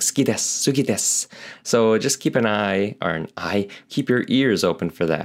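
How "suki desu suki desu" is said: suki clipped short, then desu. Showing how people in japan say the phrase: saying "suki" very fast. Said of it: "'cause they say "suki" so fast".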